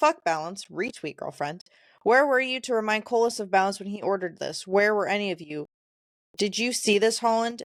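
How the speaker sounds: ordinary talk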